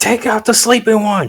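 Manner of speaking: high-pitched, barked, shouted delivery. Yelling an order to an ally behind him in a fight: yelling an order in character. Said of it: "I'm gonna yell at Strider behind him".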